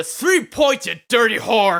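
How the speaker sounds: high, booming, very loud, shrill yell full of vigor. Getting three points, saying the line with great vigor. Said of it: "Even Donut doesn't even say that line with that much vigor in his voice".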